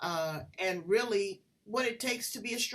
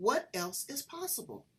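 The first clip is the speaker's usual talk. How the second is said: inquisitive, wondering, curious tone. Speaker demonstrates how to ask the question, in a curious tone. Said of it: "Asking that in a curious tone".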